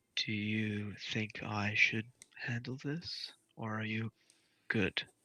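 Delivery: soft, hushed, private half-whisper. In a scene, a character asks another privately, half-whispering in his ear. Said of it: "just kind of whisper in his ear".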